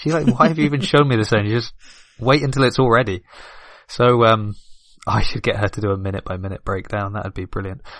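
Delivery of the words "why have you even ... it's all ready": fast, high angry outburst. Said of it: "She gets angry".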